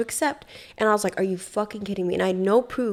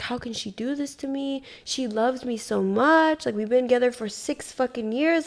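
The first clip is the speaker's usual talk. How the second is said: mock tearful sobbing, crying through tears; 4 semitones higher than usual. Retelling what a man told the police: imitating someone crying. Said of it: "he's crying to us saying".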